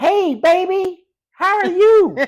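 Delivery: very high-pitched, very loud, drawn-out voice. Showing how your dad greeted people with his distinct voice, imitate his real high-pitched voice. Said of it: "The real high pitched voice".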